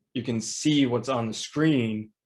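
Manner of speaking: ordinary talk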